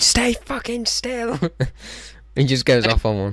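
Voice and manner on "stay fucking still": high, slow mock shout. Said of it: "where he's shouting".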